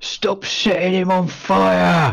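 high yelling ogre voice, fire drawn out. Voicing an ogre who turns on the players: ogre yelling. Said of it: "ogre turns and yells".

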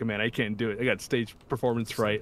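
ordinary delivery

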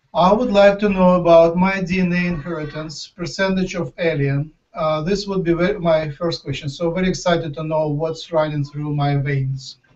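normal talking voice

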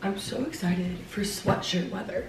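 quiet whisper. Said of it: "I'm whispering 'cause Maddie's upstairs".

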